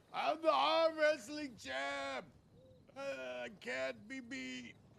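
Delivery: put-on rough, very high, drawn-out drunken yell. Voicing a drunk lying on the road, yelling at passersby: drunk man yelling. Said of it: "He just yells out".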